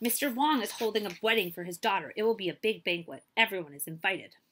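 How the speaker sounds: ordinary delivery, nothing marked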